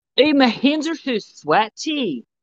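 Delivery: put-on Scottish accent, pitched very high. Setting a scene as the new altar, trying british, accidental scottish accent. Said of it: "that's Scottish".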